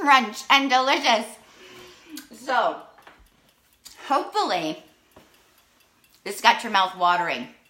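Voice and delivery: talking while chewing, mouth full. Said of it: "pardon me talking with my mouth full".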